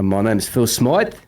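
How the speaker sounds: attempted put-on Australian accent. Asked for his finest aussie accent, put-on australian accent. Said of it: "your finest Aussie accent".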